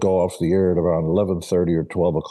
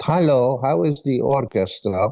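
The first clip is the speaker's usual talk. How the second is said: heavy put-on Hungarian accent, pitched up; 6 semitones higher than usual. Imitating the speaker's mother asking about the orchestra: imitating thick hungarian accent. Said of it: "She spoke with a thick Hungarian accent".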